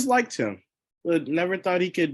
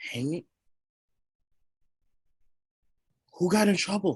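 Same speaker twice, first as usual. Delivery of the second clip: hushed, whispering voice. Asking a hammering townsman who got in trouble, in character: whispering. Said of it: "Are you whispering that to the people behind you".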